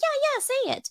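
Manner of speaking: acted, very high, eager and excited voice. Retelling how the teacher urged a classmate to read the word: imitating an excited teacher. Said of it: "the teacher was so excited".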